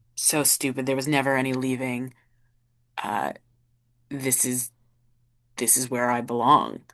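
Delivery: mumbled words under breath. Voicing a broken character muttering at a doorstep: muttering to himself. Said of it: "you almost hear the muttering".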